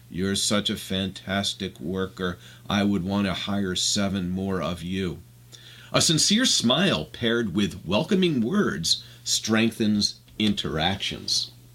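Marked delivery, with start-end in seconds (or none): 0.1-5.1 low, flat, dead-level, unvaried monotone. Speaker demonstrates a leader giving positive feedback; monotone voice. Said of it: "with a monotone voice".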